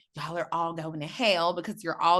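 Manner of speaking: ordinary delivery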